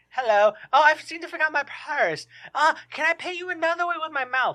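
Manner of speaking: terrible fake British accent. Imitating a British receptionist caller on the phone: terrible put-on British accent. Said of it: "She's got a terrible accent".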